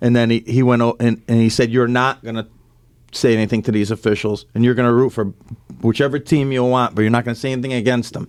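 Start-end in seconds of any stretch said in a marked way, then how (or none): none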